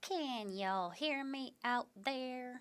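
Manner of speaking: adopted Southern accent. Speaker greets everyone and checks they can hear, put-on southern accent. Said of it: "I just adopted that southern accent".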